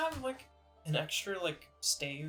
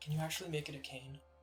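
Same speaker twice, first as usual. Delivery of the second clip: softly whispered; 4 dB quieter than usual. Player has his character walk up to her and ask something; whispering. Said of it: "I'm gonna whisper".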